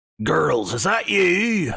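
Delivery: slow, put-on NPC-style character accent. Voicing an NPC calling from a back room: put-on character accent. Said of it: "I've used the accent".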